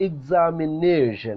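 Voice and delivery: stress on na in examination. Teaching ways to give emphasis, the speaker stresses NA in examination. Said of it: "we are giving much uh, louder sound to nay".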